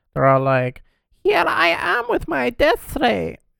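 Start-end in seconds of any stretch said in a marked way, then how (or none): 1.3-3.4 put-on very high, shrill, heavy German evil-scientist villain accent. Describing how evil German scientists talk, the speaker demonstrates: evil German scientist voice. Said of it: "like the weird, like evil German scientists sound like".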